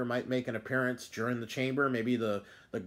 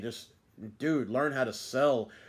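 usual speaking voice

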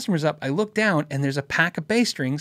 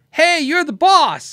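loud, high, stretched-out, drawn-out yell; 10 semitones higher, 6 dB louder than usual. Retelling how someone yelled across the store: imitating someone yelling. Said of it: "he yells across again the store to my wife".

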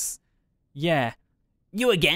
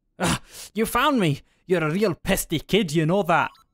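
put-on Scottish-accented voice; 2 semitones higher than usual. A character annoyed that a kid found them again, in a scottish accent. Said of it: "Why are you Scottish now?".

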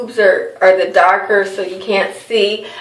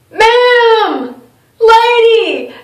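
very high, drawn-out calling out with 'ma'am' stretched; 5 dB louder than usual. Storyteller recounting a man calling after her as she left the store, retelling a man yelling. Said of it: "Just yelling like that".

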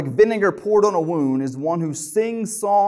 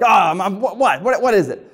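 harsh, annoyed, irritated delivery; 3 semitones higher, 4 dB louder than usual. Showing a harsh way to answer someone in a marriage, harsh, annoyed reply. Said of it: "if you answer someone like".

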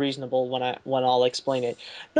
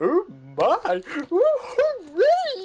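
high, drawn-out goofy cheer. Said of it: "It's like".

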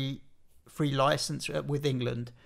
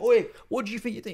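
acted shout, higher and louder; 7 semitones higher, 4 dB louder than usual. Retelling how his wife shouted at fouls on TV: imitating his wife shouting.

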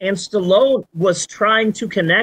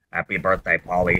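eerie, creepy, mechanical male robot voice; 5 dB quieter than usual. Retelling the robot greeting paulie at his birthday party: imitating creepy robotic male voice. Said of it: "it's a creepy robotic male voice".

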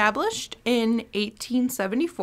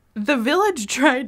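giggles breaking into the speech; 3 semitones higher, 3 dB louder than usual. Telling a sad town history to another speaker, laughing while talking. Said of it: "I can't even say it without laughing".

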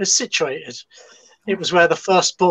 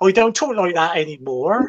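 English Suffolk accent. Speaker describing a clergyman's accent demonstrates how people talk in Suffolk. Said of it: "where they talk like this down there".

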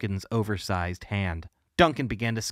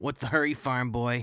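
hoarse, croaking voice. Narrator reads a bully taunting a classmate on his way home, croaking. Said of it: "Duncan croaked".

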